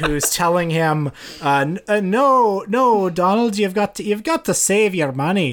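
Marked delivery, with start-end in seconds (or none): 1.4-5.5 put-on Scottish accent, higher. Retelling a Disney cartoon, voicing the Scottish Donald on his shoulder in a Scottish accent. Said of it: "Is that how you do a Scottish accent?".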